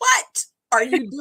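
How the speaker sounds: sudden, shrill, high-pitched voice. Retelling a moment when mother walked in: imitating mother's high-pitched voice. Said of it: "my mother comes in the room with that high-pitched".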